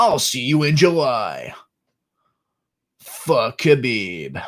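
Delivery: put-on American accent, fight-announcer style, drawn-out "July". Trying out phrases an American would say, in an American accent. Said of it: "That's my American voice".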